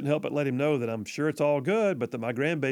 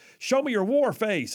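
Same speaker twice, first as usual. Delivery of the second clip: barking drill sergeant voice, pitched up; 8 semitones higher, 3 dB louder than usual. Recalling pumping up a young girl before her soccer games, doing a Gunny impression. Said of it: "I'd do my best Gunny impression from Full Metal Jacket".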